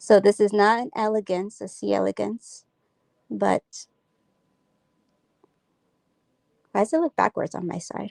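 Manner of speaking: hushed voice, speaking very low. Describing an animal that is sensitive to vibrations, speaking really low. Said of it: "the reason why I'm speaking really low".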